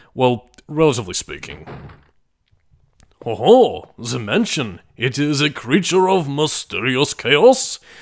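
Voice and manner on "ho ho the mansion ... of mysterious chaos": bizarre, inaccurate, drawn-out put-on French accent. Showing off a game area in a bizarre inaccurate French voice. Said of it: "doing a bizarre Frenchy voice that is inaccurate".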